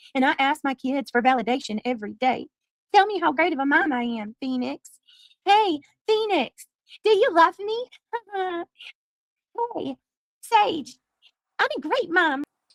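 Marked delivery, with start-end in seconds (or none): 3.0-12.5 put-on babyish, high-pitched toddler voice. A mom asks her kids for validation, in a put-on baby voice. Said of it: "I speak like a baby".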